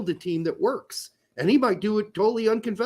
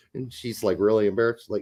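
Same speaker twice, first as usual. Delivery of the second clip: normal talking voice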